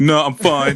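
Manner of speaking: play-acted sullen teenage voice, shutting everyone out. Joking about how real teenagers would talk on the show: imitating a teenager shutting people out. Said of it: "it'd be like".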